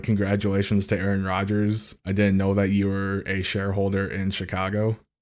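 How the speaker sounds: ordinary talk, nothing marked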